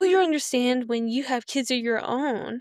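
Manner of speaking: usual speaking voice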